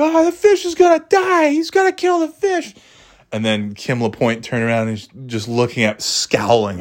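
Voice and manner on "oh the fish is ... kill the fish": shrill, high-pitched schoolkids yelling. Retelling how classmates reacted to a forgotten fish: imitating kids yelling. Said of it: "yelling at me".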